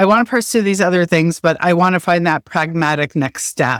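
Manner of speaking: ordinary delivery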